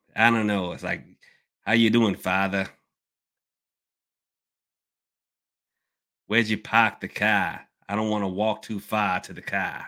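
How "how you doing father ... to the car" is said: put-on Boston accent throughout. Saying they dislike boston accents, the speaker mimics a boston accent. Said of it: "I do not like Boston accents".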